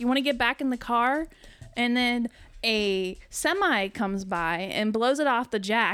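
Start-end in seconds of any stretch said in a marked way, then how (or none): 0.0-1.3 loud, pitched-up yelling. Retelling a roadside tire change at night: imitating someone yelling. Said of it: "you were yelling at me".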